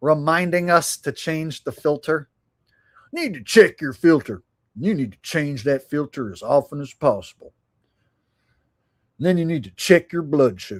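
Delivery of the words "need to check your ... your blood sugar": TV-commercial pitchman delivery, ad style. Joking that another person reminds them to change the filter: Wilford Brimley impression. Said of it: "you're like the Wilford Brimley of".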